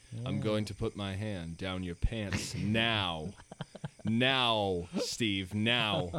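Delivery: flat monotone, slow, deliberate and dragged out. Acting out a man's line in a monotone Kevin Spacey voice. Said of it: "kind of monotone, like".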